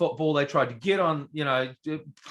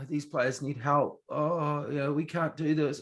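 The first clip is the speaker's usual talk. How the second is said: put-on defeated, deflated tone, quieter, slower; 6 dB quieter than usual. Retelling what he said about his own players, imitating a defeated tone. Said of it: "it was just sounded so defeated".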